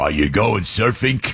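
put-on tough Brooklyn accent, surfing said as surfink. Imitating the speaker's dad from brooklyn asking about surfing, in a tough brooklyn accent. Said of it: "because he's from Brooklyn".

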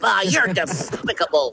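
hard, heavy lisp on the s sound. Explaining how a cartoon duck voice sounds: Daffy Duck voice with a lisp. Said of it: "sound like he talks with a lisp".

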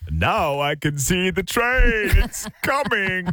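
put-on excited British enthusiast voice. Asked to do the voice, imitating the train spotter from the UK. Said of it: "Do the voice, do the voice".

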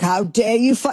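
put-on huffy tone slipping into faint British accent. Retelling an indignant reaction: indignant Scott Pelley impression, quasi light British. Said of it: "quasi light British, like, Atlantic affectation".

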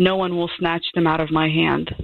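plain

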